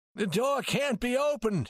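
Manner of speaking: shrill startled exclamation. An old banker, unable to open the safe with a girl inside, cries out. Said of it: "he cried".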